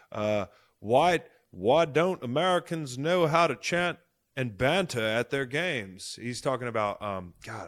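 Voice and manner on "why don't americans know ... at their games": bad fake British accent, higher, louder, slower. Reading out a British fan's question to a co-host: failed British accent. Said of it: "I can't even do the fucking British accent".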